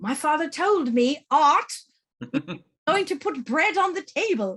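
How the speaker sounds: put-on heavy, thick South African accent. Speaker retells what a woman often told them, in a thick south african accent. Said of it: "in a very thick South African accent".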